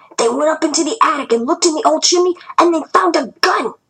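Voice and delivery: eager, thrilled. Narrator reading a man's report in a story; hushed with excitement. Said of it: "His voice was hushed with excitement".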